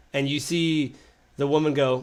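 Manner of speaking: ordinary delivery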